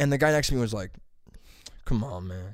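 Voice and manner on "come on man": low, soft mutter under the breath. Retelling what the guy in the sauna said: imitating muttering under breath. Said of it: "underneath his breath".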